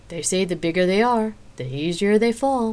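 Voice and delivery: goading, needling, mocking taunting voice. A woman mocks a fallen man as nearby patrons laugh, taunting. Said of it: "Xena went on in a taunting voice".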